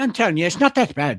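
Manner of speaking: bad put-on Irish accent. Addressing listeners during the show, insisting it's fine, in a bad Irish accent. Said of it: "maybe that one was".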